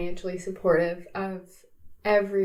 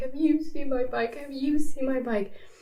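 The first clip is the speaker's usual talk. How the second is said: mock tearful, high, sobbing voice; 7 semitones higher than usual. Retelling going house to house looking for a lost bike: imitating own past sobbing. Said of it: "And I'm sobbing".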